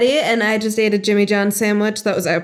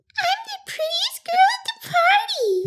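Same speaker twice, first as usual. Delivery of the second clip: very high, squeaky, cartoonish heroine voice. Showing a Powerpuff Girls voice after saying she's good at voices. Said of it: "I could do, like, Powerpuff Girls".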